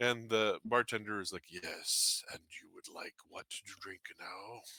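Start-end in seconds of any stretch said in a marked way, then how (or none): 1.5-4.6 soft, hoarse, raspy voice. Retelling what the bartender said to them: raspy bartender voice. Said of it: "has this kind of raspy voice to him".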